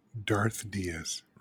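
quiet, foreboding tone. Podcast host introducing his co-host by a nickname, ominous. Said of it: "I thought it sounded ominous the way I said Darth".

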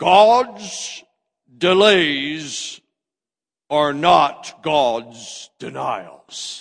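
very slow, drawn-out preacher-style delivery, words stretched out. Quoting a famous preacher's saying: Robert Schuller impression. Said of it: "do my best Robert Schuller for you".

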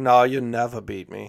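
put-on Norwegian accent. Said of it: "I don't know if that's a Norwegian accent".

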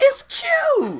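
shrill, very high, very loud voice, cute, stretched. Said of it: "In that voice?".

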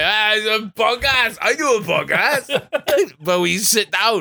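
put-on slow, drawn-out, high-pitched announcing yell. Imagining what onlookers would say, imitating someone shouting. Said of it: "And shouting".

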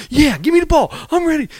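bursting, over-eager, very high enthusiasm, acted out. Retelling a teammate's reply to a warning: imitating Steve Kerr being overly exuberant. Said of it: "he's so overly exuberant".

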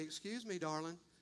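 put-on insincere politeness. Retelling what Susan says after something is stepped over: imitating Susan's insincere tone. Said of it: "such an insincere darling at that moment".

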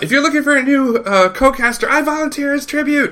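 very high-pitched mock voice.

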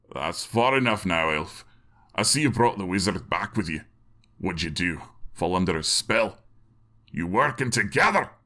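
voice trembling and shaking with anger. The dwarf Balgus, axe raised, faces the approaching elf: Balgus, voice shaking with anger. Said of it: "where they saw [name] standing behind the low stone wall of his property, great axe in hand. The dwarf had on a steel helmet and had managed to get his gauntlets and a breastplate on as well before rushing".

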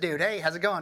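put-on laid-back Louisiana Southern drawl. Like you're doing an impression of an old roommate who greets everyone in a thick, easygoing Southern drawl, amused at how funny he sounded. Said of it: "he had a really funny Louisiana accent".

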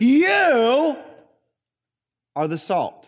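heavy stress on "you", the rest plain. Reading the verse as a Greek would have read it: strong stress on you. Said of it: "you would have read it like this".

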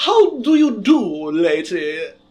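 loud, very slow, posh British accent. Putting on a very cheap posh british accent to address a lady. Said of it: "I put on a very, very cheap British accent. Or I guess a posh accent".

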